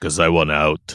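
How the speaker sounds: terrible put-on movie-star tough-guy voice. Explaining why a movie character changes sides: terrible Stallone impression. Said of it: "That's a terrible Stallone impression".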